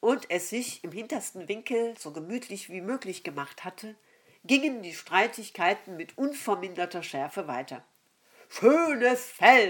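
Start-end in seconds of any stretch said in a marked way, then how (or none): 8.5-9.7 scornful, mocking, sneering jeer. An ox mocks another animal during a quarrel, mocking sneer. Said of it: "höhnte der Ochse".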